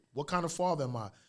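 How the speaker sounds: plain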